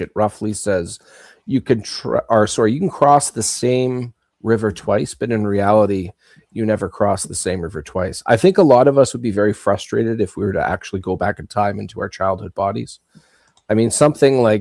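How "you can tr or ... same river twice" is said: normal talking voice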